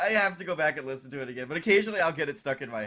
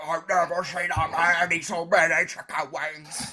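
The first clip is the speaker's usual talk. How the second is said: growling, cheap-sounding mock voice. Imitating a parody of people doing a growling voice: imitating Trey's growling parody voice. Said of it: "people do that growling voice".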